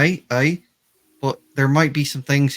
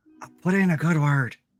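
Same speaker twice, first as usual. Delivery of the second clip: mock grand, stagey, showy theatrical delivery; 3 semitones higher than usual. Retelling a scene, speaker acts out what a man theatrically says, theatrical delivery. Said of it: "he like theatrically goes like".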